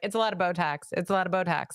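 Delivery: normal talking voice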